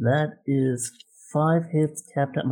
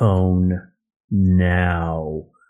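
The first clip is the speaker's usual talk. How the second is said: very deep, very low, angry witch voice; 7 semitones lower, 7 dB louder than usual. Retelling confronting a man, in a mock-angry deep witch voice. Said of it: "Deep all angry right, witch's right, voice".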